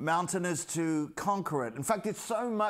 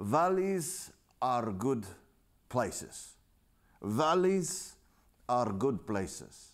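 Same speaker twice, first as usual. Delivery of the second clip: put-on strong Hebrew accent; 5 semitones lower than usual. A speaker quotes his tour guide in Jerusalem, in a very strong Hebrew accent. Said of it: "in his very strong Hebrew accent".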